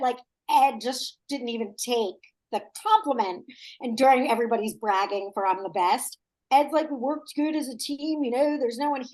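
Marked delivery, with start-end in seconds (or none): 6.9-9.0 put-on plain, conversational Philadelphia accent. Retelling how Ed answers while everybody else is bragging, Ed impression in a Philly accent. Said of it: "Great Philly accent you did".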